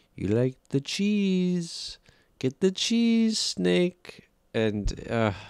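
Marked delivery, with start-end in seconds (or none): 0.2-4.3 terrible, horrible put-on Indian accent, pitched very high. Describing Pistachio feeding the snake, the speaker quotes: Pistachio's horrible Indian accent. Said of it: "in this horrible Indian accent".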